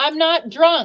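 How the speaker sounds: high, loud, defensive shout. Telling a story about stumbling at a park with the kids, retelling a yell. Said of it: "I yelled".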